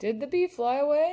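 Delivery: rising pitch on away. Reading a question aloud, the voice rises at the end on away. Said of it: "I'm raising my voice. When I read a question, I raise my voice at the end".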